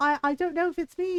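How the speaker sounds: put-on British accent. Acting out Colton's reply after being given dresses, imitating Colton in British accent. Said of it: "he's just a British horse now forever".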